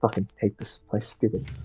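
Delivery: whispered, breathy grumble muttered under the breath. A player voicing her character in a role-play game, muttering to herself. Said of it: "She just keeps muttering".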